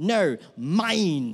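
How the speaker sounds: acted fierce, passionate, possessive little-kid voice. Retelling a girl's answer when told to share her grapes, mimicking her passionate possessiveness. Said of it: "she says it with such passion and ownership".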